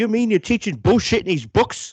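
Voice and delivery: very high, deliberately bad, freaked-out squealing voice. Retelling a scene from the show: horrible Tony Soprano impression. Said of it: "that's a horrible Tony Soprano".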